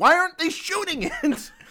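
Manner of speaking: very high, swooping, indignant angry outburst. Retelling how Sonia watched over the speaker's shoulder, imitating Sonia's angry outburst. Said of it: "she got so angry".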